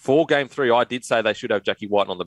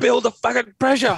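shrieking, very high-pitched screaming yell; 13 semitones higher than usual. Recounting watching a rugby league match: retelling a scream. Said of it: "I'm screaming pressure".

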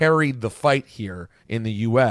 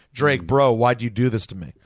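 put-on sarcastic voice.

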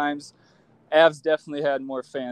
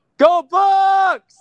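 shrill, very loud, high-pitched top-of-the-lungs yell; 9 dB louder than usual. Asked to yell at the top of their lungs, the speaker yells. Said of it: "Yell some shit".

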